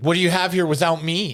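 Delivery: put-on smug, cocky, self-assured tone. Recounting the main guy urging her to come to college, mimicking cocky Kenny Travis. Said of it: "cocky about this".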